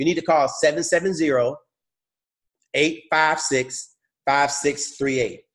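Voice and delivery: slow, deliberate, carefully spaced-out reading. Giving a phone number to call for a pay plan: slowing down. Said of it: "let me slow down".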